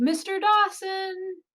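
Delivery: high-pitched yelling, called out loud. Calling out into a hallway in character: yelling a name. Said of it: "and yell".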